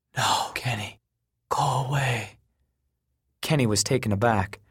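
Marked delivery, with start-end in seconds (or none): 0.1-2.3 slow half-whisper, breath only. Moroni answers kenny, who pleads to learn his secret, half-whispering. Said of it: "Moroni whispered".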